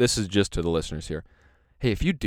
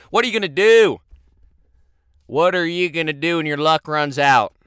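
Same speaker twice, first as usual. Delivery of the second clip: loud, high Southern preacher sermon voice; 7 semitones higher, 7 dB louder than usual. In a roadside assistance pitch, speaker switches back to the southern preacher voice. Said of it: "I'm back at the Southern preacher".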